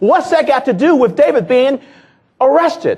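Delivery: very high, loud, furious angry outburst. Acting out a phone call, voicing Ed's reply: imitating Ed's angry voice. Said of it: "I can hear the anger in your voice".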